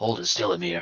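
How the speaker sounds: whispered, in a character voice. Speaking in character while aiming a crossbow: whispering in character. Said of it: "I'm gonna kind of sort of whisper".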